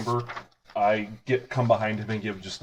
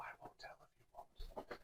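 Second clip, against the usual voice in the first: hushed, very quiet, barely voiced whisper. A player speaks in character, answering another character: very quiet whisper. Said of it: "I just very quietly whisper".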